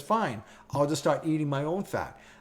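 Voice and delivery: ordinary talk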